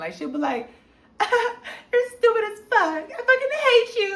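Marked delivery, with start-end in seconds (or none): 1.2-4.2 very high, loud, teasing and flirty. Retelling how a neighbor talked on the phone: imitating flirty cussing. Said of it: "cussing somebody out in the most flirty way".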